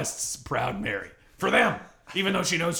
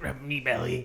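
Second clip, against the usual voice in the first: put-on pirate voice, lower; 3 semitones lower, 3 dB quieter than usual. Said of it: "Like a pirate?".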